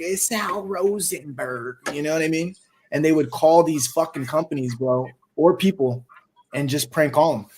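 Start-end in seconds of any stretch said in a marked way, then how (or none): 0.0-1.8 put-on elderly woman voice. Speaker recalling crank callers who changed their voices, in Sal Rosenberg old lady voice.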